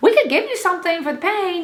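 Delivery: terrible, high put-on New Zealand accent. Retelling what a woman from New Zealand said, offering something for the pain: bad New Zealand accent. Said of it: "I don't know what accent that was. Just ignore it. It was terrible".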